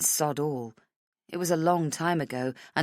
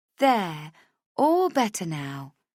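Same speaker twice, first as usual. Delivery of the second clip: lilting sing-song voice with an up-and-down tune; 2 semitones higher than usual. Reading a story where a friend comforts the narrator: sing-song voice. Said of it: "she says in a sing-song voice".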